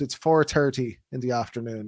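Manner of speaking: southern Irish accent with hard T's. Explaining regional accents in Ireland, saying a time in southern Irish accent. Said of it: "if you go more to the south in Ireland, you get you get more hard T's on the D's".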